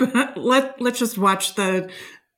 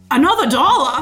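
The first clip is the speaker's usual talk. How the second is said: put-on Maine accent, pitched up; 5 semitones higher, 4 dB louder than usual. Describing the toll booths in Maine, a speaker does a Maine accent impression. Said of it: "here's my Maine impression".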